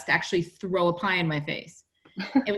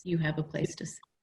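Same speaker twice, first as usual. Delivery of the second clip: put-on sweet, kind voice, quieter; 3 semitones lower, 8 dB quieter than usual. Retelling a pickup line a date once said: imitating a sweet, kind voice. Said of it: "in the sweetest, kindest voice".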